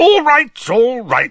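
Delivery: panicky, very high voice. An uncle cuts off his nephew's talk of Quidditch, loudly. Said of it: "said Uncle Vernon loudly".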